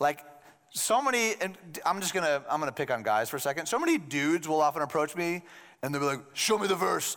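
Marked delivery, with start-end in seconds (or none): 6.3-7.2 put-on caveman-like guy voice. Imitating guys who approach the speaker demanding a verse, caveman dude voice. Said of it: "I don't know why I gave guys that voice".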